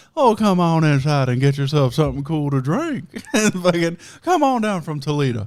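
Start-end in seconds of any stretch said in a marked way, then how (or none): 0.2-3.1 put-on folksy country voice, louder. Speaker retells his mom calling from the front porch, imitating folksy country mom. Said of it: "your country bumpkin wife".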